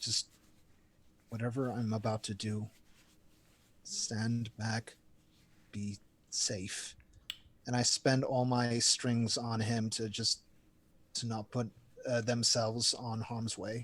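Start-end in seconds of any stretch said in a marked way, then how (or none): 0.0-6.9 soft, hushed, half-whispered stage whisper. Half-whispering to Alex in character, warning him to stay back: half-whispering. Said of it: "I whisper to Alex".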